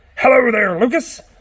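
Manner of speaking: loud, awful put-on garden gnome voice. Answering for the garden gnome just greeted, in a bad garden gnome voice. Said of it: "That was a terrible impersonation of a garden gnome".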